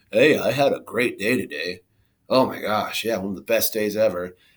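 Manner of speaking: said sarcastically. Giving an example of someone talking sarcastically, sarcastic tone. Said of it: "they're saying sarcastically".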